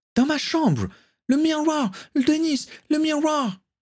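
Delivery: shrieking at the top of the voice, very high. Caitlin keeps calling to dennis as the boat leaves the quay, screaming. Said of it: "hurlait encore Caitlin".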